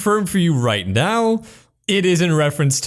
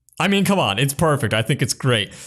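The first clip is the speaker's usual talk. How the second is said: ordinary talk, nothing marked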